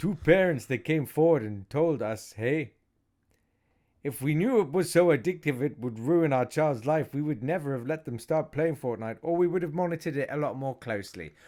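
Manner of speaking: put-on Canadian accent. Quoting parents in a case who came forward, canadian accent. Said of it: "in a Canadian accent".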